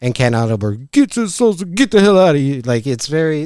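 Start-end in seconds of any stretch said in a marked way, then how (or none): 0.9-2.6 barely intelligible, garbled, high, jumbled words. Show listeners a classic Brendan bit, in a hard-to-understand Brendan voice. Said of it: "voices where it's like, what are they saying?".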